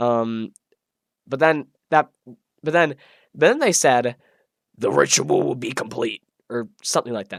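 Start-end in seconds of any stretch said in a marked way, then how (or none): 4.8-6.2 deep, rough, gravelly low rasp. Quoting what they said in a self-described bad impression: deep, rough, gravelly voice. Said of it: "my impression was probably terrible ... a deep, rough, gruggly voice".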